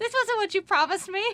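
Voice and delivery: high, loud, nagging, scolding voice.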